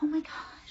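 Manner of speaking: put-on mad, upset kid voice in a breathy whisper. Retelling a young x-ray patient's reaction: imitating a mad, upset kid. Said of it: "he was really mad and upset".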